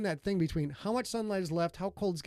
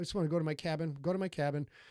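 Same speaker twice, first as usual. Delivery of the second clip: ordinary delivery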